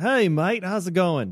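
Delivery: put-on Australian accent. Retelling greeting a painter at the office, imitating an Australian accent. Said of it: "the most Australian-sounding Australian".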